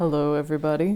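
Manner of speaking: put-on deep voice. A co-host greets everybody at the start of the show in a put-on deep voice. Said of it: "I'm doing the deep voice".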